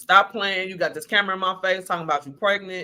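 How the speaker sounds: ordinary talk, nothing marked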